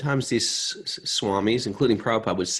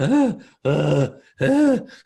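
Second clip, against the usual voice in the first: high, loud zombie moan. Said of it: "pale face like a zombie".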